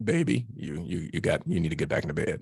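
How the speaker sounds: firm, low, deep fatherly daddy voice. Retelling what he said to his young daughter at 3 a.m.; low-register daddy voice. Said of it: "with that low register daddy voice".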